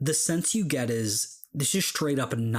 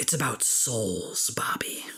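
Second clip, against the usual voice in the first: close, intimate imp-like whisper right in the ear. Voicing an imp who leans in close to Bobby: whispering imp. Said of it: "she just gets in close and she whispers".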